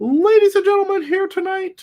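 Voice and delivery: high, loud, big wrestling announcer voice. Opening a wrestling broadcast as an announcer: Tony Schiavone impression. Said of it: "that's my Tony Schiavone impression".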